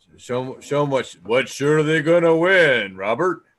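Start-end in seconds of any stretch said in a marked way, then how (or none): 1.3-3.4 terrible put-on on-air radio announcer voice. While spinning a prize wheel, the speaker announces in a radio voice. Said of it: "That, that was my radio voice".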